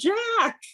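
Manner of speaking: high, sudden, loud yell.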